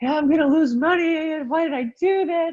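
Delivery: play-acted, very high, drawn-out panicked fretting. Retelling a call from a mentored investor: imitating a panicking investor. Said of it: "they're on the ledge".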